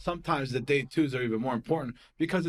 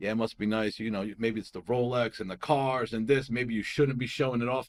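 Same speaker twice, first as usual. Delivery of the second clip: put-on, snide, sarcastic, needling jab; 3 semitones lower than usual. Retelling what one of the girls told the speaker: imitating a sarcastic remark. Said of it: "very, like, sarcastic and shit".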